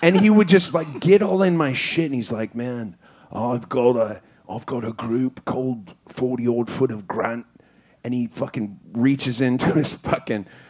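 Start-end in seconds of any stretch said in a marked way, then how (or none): 2.5-7.5 deep, low, intense voice, close up. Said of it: "he was really intense".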